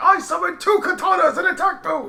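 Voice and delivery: very high-pitched, proclaiming voice. Joking about a voice actor playing Leonardo: Yugi voice. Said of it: "do it Yugi style".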